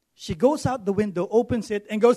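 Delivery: ordinary talk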